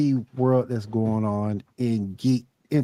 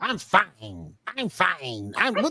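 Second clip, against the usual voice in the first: mock angry insistence, higher and quieter; 6 semitones higher, 5 dB quieter than usual. Imitating someone mad who insists she is fine. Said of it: "when you're mad".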